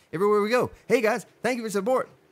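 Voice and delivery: double-speed playback voice, fast and high. Joking about viewers watching at double speed: fast sped-up talking. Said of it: "Spartan will be talking like this".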